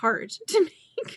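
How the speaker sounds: slow, high laughing through the word.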